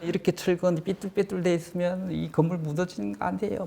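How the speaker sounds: high-pitched, angry, upset voice. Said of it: "건축주가 막 화가 나".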